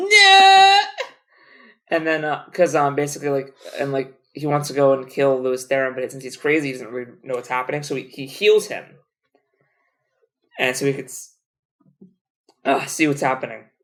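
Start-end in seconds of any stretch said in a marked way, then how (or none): 0.0-0.8 high, loud anguished scream. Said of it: "And then he's like".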